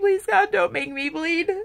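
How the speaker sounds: put-on crying, tearful begging tone. Recalling terror of bleeding at a therapist's session, retelling tearful pleading. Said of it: "I started crying like on the spot".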